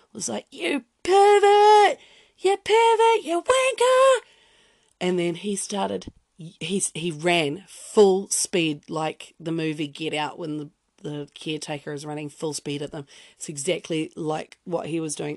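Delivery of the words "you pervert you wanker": put-on reckless teenage yell, very high, loud, shrill, drawn-out. Recalling yelling at a man while sunbathing, retelling a fearless teenage yell. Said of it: "I'm indestructible kind of yell".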